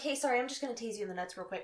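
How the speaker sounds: soft, easy, unbothered, matter-of-fact calm. Retelling what Sam said before tasing someone: imitating Sam's calm tone. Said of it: "It was so calm".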